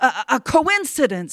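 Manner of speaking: stammering. The husband answers his wife, who demands a second wish, stammering. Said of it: "stammered her husband".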